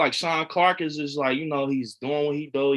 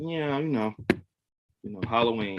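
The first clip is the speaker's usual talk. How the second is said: put-on nonchalant tone, lower and quieter; 4 semitones lower, 4 dB quieter than usual. Retelling an autograph signing: imitating Tom Atkins's nonchalant answer. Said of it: "nonchalant answer".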